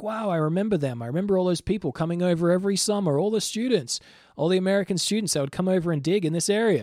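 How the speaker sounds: put-on big American accent.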